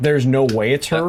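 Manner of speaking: usual speaking voice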